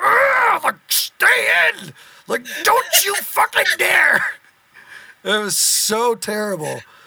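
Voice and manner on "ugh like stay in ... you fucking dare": play-acted scream, pitched very high. Retelling standing hunched over in the back of the van: imitating own screaming.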